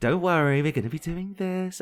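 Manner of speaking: high, patronizing, condescending primary-teacher voice. Mocking how others talked to an angry man like a primary school teacher: mock patronizing teacher voice. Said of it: "the patronizing voice like you're a primary school teacher".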